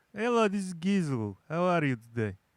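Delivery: random put-on Eastern European accent. Trying out a greeting in a random Eastern European accent. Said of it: "throwing out some random Eastern, European".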